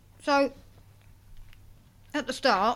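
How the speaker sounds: talking while eating. Co-host reviewing a film, caught talking while eating. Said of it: "What were you eating?".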